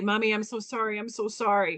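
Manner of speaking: put-on hysterical crying. Mother recounting her sick daughter's nightmare, imitating hysterical crying. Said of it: "she'd get all hysterical again and crying".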